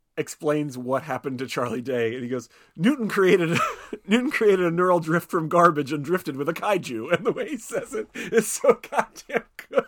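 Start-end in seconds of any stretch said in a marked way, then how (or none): 2.8-7.1 put-on high, flustered, huffing, stuffy British accent. Quoting his favorite line from a movie, flustered, stuffy Burn Gorman impression. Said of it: "flustered, stuffy, and, like, he's a little disproving of it".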